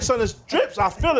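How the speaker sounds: normal talking voice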